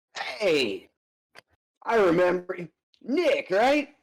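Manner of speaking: big, friendly, hearty voice. Voicing a character who calls to the group coming downstairs, friendly and loud. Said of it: "you're gonna hear a friendly, uh, kind of loud".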